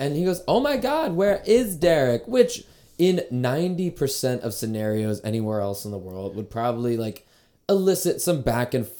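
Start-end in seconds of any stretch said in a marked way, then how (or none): 0.5-2.3 play-acted light, jokey chirp, pitched very high. Retelling how one of the group chirped back at a loud local woman, a playful chirp.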